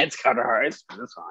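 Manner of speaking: mock nonchalant sarcastic tone. Imitating the other speaker's sarcastic pick for an award: imitating a nonchalant, sarcastic tone. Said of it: "You just so nonchalant. It's like".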